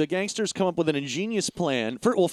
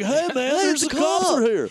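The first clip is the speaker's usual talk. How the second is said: higher-pitched put-on doofy guy voice; 9 semitones higher, 4 dB louder than usual. Retelling a movie scene, imitating Bill Paxton's character greeting the cops. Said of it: "'Cause Bill Paxton's like".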